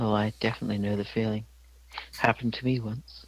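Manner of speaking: woman's voice. Voicing a bird that answers a player: lady's voice from a bird. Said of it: "you hear a lady's voice come from the bird".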